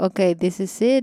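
ordinary delivery

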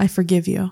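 speaking in a whisper. Voicing a character forgiving a player up close: whispering. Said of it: "leans in to Trigus and whispers".

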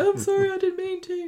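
acted, very high, tearful, sorry weepy voice. Joking that a soap character would be a sad killer: mock weepy George Shuttleworth voice. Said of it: "he'd be like the weepy voiced killer".

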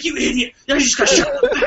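mock shrill, very high, angry scolding yell. Speaker retelling being chased by somebody scary, imitating Wings yelling. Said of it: "Wings just started yelling at me like".

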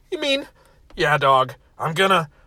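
ordinary delivery

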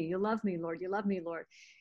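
put-on whispered voice. Retelling a voice that kept prompting, imitating a whisper. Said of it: "he kept whispering and prompting me".

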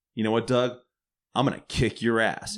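plain

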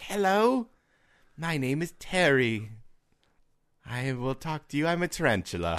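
high slow creature voice. Imagining a pet tarantula that could talk: voicing Terry the talking tarantula. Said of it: "the tarantula could talk. It was like".

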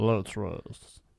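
put-on voice, deep and squeaky. Asked who they are doing, the speaker answers with a Vin Diesel impression. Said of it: "I'm Vin Diesel".

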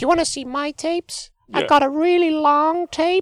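very high squeaky put-on voice. Acting out a story with a co-speaker, squeaky voice. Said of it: "You do a really good squeaky voice".

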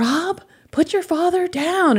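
mock scolding shout, shrill, very high. Retelling what a mother shouted from another room: imitating mother yelling. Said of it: "she's yelling".

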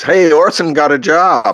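play-acted, shrill, very high yell at full voice. Telling how a man yelled out in the middle of the cinema, retelling a top-of-his-voice yell. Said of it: "yelled out at the top of his voice".

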